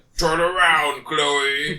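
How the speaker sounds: mock monster-voice scream. Retelling how one girl yelled at another; imitating a screaming monster voice. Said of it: "starts screaming in a man voice, like a monster voice".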